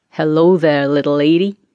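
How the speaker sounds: suggestive, insinuating come-on tone. A man greasing a wagon wheel turns and greets Claire, suggestive tone. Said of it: "he said in a suggestive tone of voice".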